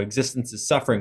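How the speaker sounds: ordinary talk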